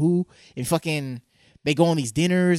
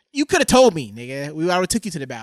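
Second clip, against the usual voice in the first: play-acted, heated, berating scolding rant. Acting out a talk with an imagined son: acted yelling at his son. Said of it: "You yelling at him now?".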